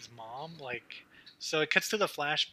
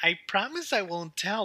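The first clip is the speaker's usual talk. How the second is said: put-on high, loud, childlike baby-talk voice; 6 semitones higher, 5 dB louder than usual. Recapping a movie, quoting the mom's line: baby voice. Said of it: "still in a baby voice".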